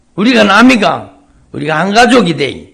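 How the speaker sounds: loud, folksy Gyeongsang dialect, wide pitch range.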